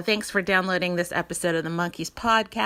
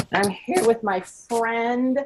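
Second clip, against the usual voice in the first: voice breaking in the middle of the line; 4 semitones higher, 3 dB louder than usual. A podcast host introducing his friend on the show, voice cracking. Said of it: "did you hear my voice crack?".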